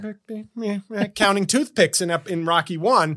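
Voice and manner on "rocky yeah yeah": soft, quiet, gentle impression voice. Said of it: "she went from".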